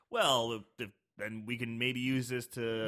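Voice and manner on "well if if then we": ordinary delivery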